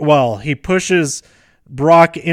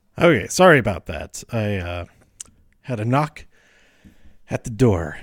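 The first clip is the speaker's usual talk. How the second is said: a little winded, lower and quieter; 6 semitones lower, 4 dB quieter than usual. Apologizing after answering a knock at the door, slightly out of breath. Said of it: "I'm slightly out of breath".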